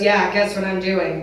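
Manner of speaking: ordinary talk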